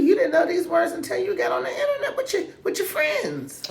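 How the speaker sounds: high, laughing, teasing tone.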